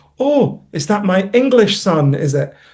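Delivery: acted angry, accusing scolding tone. Retelling what a mother says when really angry with him: imitating his angry mother. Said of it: "whenever she's really angry with me, she'll say".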